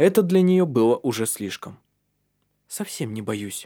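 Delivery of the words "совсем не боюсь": said quietly, softly, much quieter. Taunted that she is afraid, she answers the men quietly. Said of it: "Тихо сказала она".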